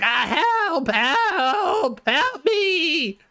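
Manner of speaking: panicked goblin wail, very high, slow, drawn-out. Voicing a pinned goblin yelling for help: goblin yelling for help. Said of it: "yelling in goblin".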